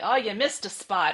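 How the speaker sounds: loud, scolding mother-style yelling. Retelling a mother yelling at a child: imitating mom yelling. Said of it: "my mom yelling at me".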